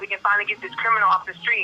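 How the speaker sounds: normal talking voice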